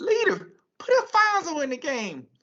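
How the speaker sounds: really high voice, at the top of the range. Telling a story from the bench during a game, quoting Barksdale in a really high-pitched voice. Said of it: "Barksdale used to talk with a high pitched voice".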